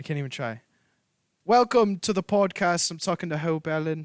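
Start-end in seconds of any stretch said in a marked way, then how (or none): 1.4-4.1 amateur attempt at a British accent. Swapping accents with the other speaker, who will do American: attempted British accent. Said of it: "I'll do American if you do British".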